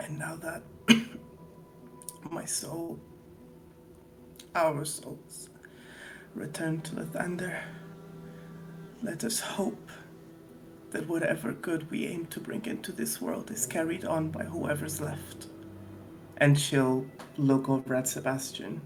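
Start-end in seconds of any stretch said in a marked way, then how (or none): 0.0-15.5 tearful, quieter, acted voice. Voicing a dying character's last words to the party: Natasha's dying farewell, emotional. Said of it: "she's gonna say".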